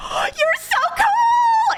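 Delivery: put-on very high, loud starstruck gush, cool stretched. Acting out a character meeting the Hulk: imitating someone gushing excitedly.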